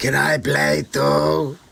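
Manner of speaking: put-on voice of an elderly financier. Joining Doctor Evil's call as George Soros: George Soros impression. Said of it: "This is how he sounds, dead on".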